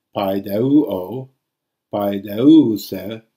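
paideuo and paideuse slow, loud, stretched, recessive accent stressed.

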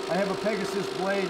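usual speaking voice

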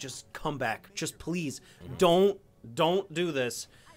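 put-on pleading voice. Retelling a scene, acting out Anakin's emotional plea. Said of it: "you can see him, like".

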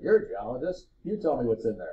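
put-on amused chuckling with swooping pitch. Retelling the landlord's reply when asked about a doghouse, retelling a chuckling reply. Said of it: "he just chuckled at me".

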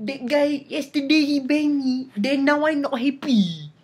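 Malay-accented speech. Demonstrating for fun, speaking like a Malay. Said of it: "how to speak like a Malay".

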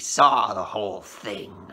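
hissed, hissing delivery. A woman replies to the narrator, hissing. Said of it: "she hissed".

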